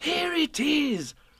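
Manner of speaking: very high, bubbling, excited cry. Narrator reads a character's cry interrupting another: excited cry. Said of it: "cried Christopher Robin excitedly".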